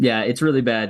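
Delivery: normal talking voice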